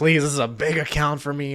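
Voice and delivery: ordinary talk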